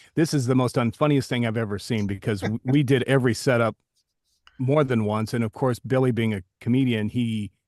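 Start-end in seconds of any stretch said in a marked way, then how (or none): none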